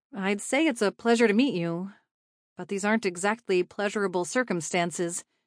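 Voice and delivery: plain reading voice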